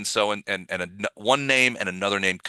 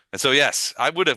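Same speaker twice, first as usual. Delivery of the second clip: ordinary talk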